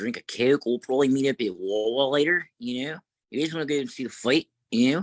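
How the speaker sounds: put-on Delaware County accent. Imitating how people talk out in Delco: Delco accent. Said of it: "that's how they talk out there in uh, Delco".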